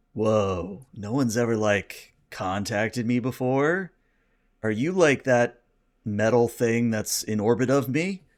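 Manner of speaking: very calm, relaxed voice. Voicing a cosmic creature answering a hail: calm relaxed Jeff Bridges voice. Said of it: "a very calm, relaxed voice".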